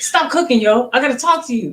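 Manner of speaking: rapid-fire, rushed talk, words tumbling out. Retelling a phone call, the speaker imitates Skerritt's fast talk. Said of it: "He's talking really, really fast".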